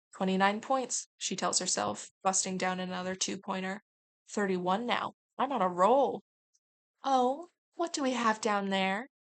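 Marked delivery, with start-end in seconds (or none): 7.0-9.1 sweet, higher voice. Narrator voicing a sentient flower calling down to someone below, in a sweet voice. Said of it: "Sweet voice calls out".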